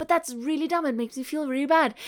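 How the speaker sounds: ordinary delivery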